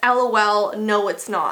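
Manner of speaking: ordinary talk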